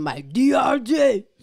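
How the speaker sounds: very high, very loud, drawn-out street drawl.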